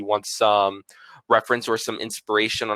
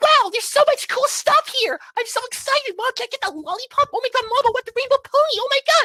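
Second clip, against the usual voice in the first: put-on squeaky, very high little-kid voice. Demonstrating how high their voice can go for a character: very high voice. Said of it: "I can go pretty high up, I guess, with my voice".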